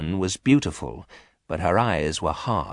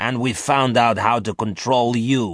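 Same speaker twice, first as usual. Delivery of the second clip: icy, cold, hard, unyielding declaration; 4 semitones higher, 3 dB louder than usual. Garth answers Omega aboard the stolen ship, in a cold, hard voice. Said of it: "said Garth in a cold, hard voice".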